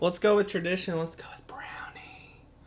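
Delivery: whispering. Calling on the next speaker, brownie, up close: whispering. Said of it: "He's whispering brownie".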